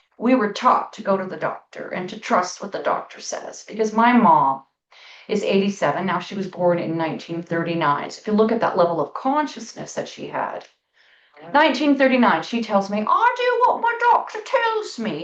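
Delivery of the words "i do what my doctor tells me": put-on Welsh accent, very high-pitched. Talking about trusting doctors, the speaker quotes their mother: imitating mom's Welsh accent. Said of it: "in her lovely Welsh accent".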